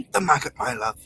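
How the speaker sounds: put-on bossy older woman voice. Imitating Kim Woodburn coaxing someone to eat a maggot: Kim Woodburn impression. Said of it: "That's a really good impression".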